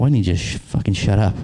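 normal talking voice

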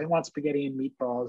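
put-on crying, tearful voice. Retelling a children's book scene, quoting the character: imitating someone crying. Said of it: "she's crying".

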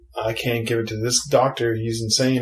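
usual speaking voice

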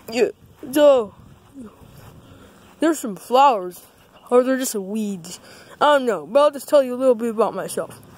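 sock puppet voice, chattering and rambling. In a short video, a sock puppet strolls around a house: Dog Christmas Sock puppet voice. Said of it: "my name is [name]. [name]. I'm a sock puppet".

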